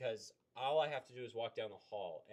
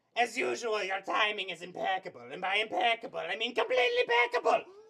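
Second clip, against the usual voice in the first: very high, very loud, booming, wildly swooping; 10 semitones higher, 11 dB louder than usual. Quoting a cartoon line after talking about Perry the Platypus: Doofenshmirtz voice. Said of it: "my favorite Doofenshmirtz line ever".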